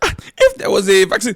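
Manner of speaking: put-on Nigerian accent, very high-pitched and loud. Imitating how the other speaker just talked: Nigerian accent. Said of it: "Why is she speaking in a Nigerian accent?".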